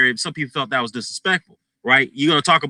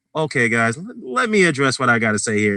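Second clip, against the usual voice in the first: mock scared, careful diplomatic tone. Retelling a man addressing listeners on his radio show the next day, imitating a scared, diplomatic tone. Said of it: "trying to be diplomatic because he got scared".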